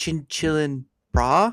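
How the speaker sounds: put-on, attempted American accent. Teasing how the other person read a phrase aloud, put-on American accent. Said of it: "trying to be an American accent".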